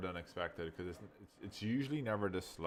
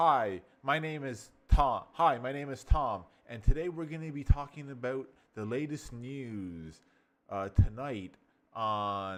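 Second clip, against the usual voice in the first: raised, bright, enthusiastic, excited news-anchor voice; 6 semitones higher, 8 dB louder than usual. Speaker demonstrates an excited way to introduce themselves on a news show, excited. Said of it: "see the excitement?".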